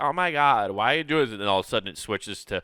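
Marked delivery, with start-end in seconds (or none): 0.0-1.3 high, loud put-on California Valley Girl voice. Acting out a voice that starts one way then switches, California Valley Girl voice. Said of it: "like a California like Valley Girl voice".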